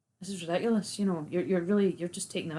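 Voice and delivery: plain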